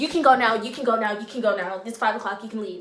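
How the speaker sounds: put-on sassy, attitude-laden tone. Retelling how a coworker told the speaker to leave, imitating her attitude. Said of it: "attitude and all".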